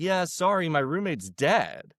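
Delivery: put-on, mildly annoyed tone. Retelling how a showrunner answered a stranger, imitating a slightly annoyed reply. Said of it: "a little annoyed and was like".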